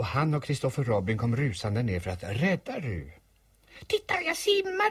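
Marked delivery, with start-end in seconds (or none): 3.9-4.9 very high, small, piping, squeaky voice. Reading ru calling out from the middle of the pond, squeaking. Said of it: "pep Ru".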